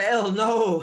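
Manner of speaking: loud, high-pitched yelling. Calling out in character during a fight: yelling out. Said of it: "I'm gonna yell out".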